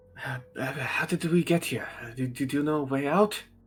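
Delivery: very hushed, murmured voice. Narrator voices the first of two overheard voices talking together, hushed voice. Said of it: "very hushed".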